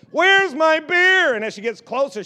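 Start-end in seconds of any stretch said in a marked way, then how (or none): 0.2-1.4 put-on angry yell, higher and louder. Retelling a grandpa at a loud game: imitating an angry scream. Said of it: "I hear him screaming, and he's getting madder".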